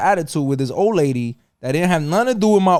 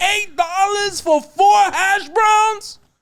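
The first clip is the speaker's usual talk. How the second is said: put-on very high, stretched-out, drawn-out shriek. Retelling arguing at a drive-through window: imitating himself screaming. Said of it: "Now I'm screaming from the car into the little window".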